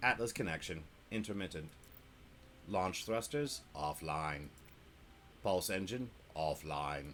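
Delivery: machine-like, robotic computer voice. Speaker reads status readouts aloud for viewers, in a computer voice. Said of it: "Let's see if I can do this as a computer voice for you".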